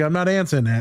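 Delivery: normal talking voice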